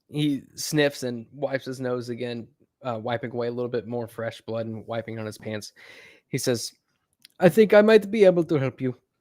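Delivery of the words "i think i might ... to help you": put-on boy's voice, flawless English, higher and louder. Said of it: "in this Turkish boy in impeccable English says".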